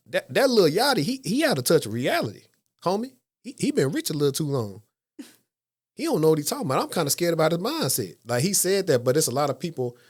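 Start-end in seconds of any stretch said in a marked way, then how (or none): 0.1-8.1 high, animated, put-on voice with swinging pitch. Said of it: "That was a good impersonation".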